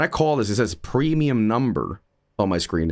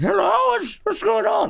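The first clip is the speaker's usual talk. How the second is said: put-on very high-pitched, creaky old grandma voice. Picturing a grandma answering the call, imitating an old grandma. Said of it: "Some grandma's gonna be like".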